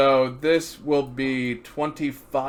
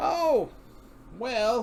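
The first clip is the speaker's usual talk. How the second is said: put-on elderly woman character voice; 11 semitones higher than usual. Playing the lady behind the counter being asked about a general, little old lady voice. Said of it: "I'm gonna drop the voice".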